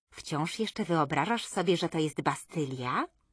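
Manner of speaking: plain reading voice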